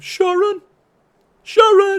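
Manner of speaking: very high, very loud, shrill, rising cry. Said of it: "Rather like uh, [name]".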